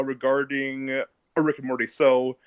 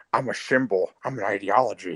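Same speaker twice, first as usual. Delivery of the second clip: low, drowsy, half-asleep comic-book villain voice; 6 semitones lower, 3 dB quieter than usual. Recreating a character from an old video, the speaker tries the Joker: put-on sleepy Joker voice. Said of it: "you just sound like a really sleepy".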